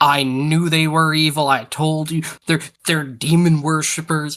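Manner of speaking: accusatory cry. Voicing a character shouting across a distance to the party: yelling in character. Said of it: "but I'm yelling".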